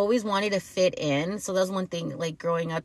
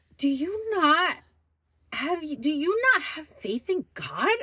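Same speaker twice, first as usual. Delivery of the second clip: mock disgusted scolding tone, higher; 10 semitones higher than usual. Retelling how the mother answers money worries: imitating disgusted mother. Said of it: "she'll be disgusted".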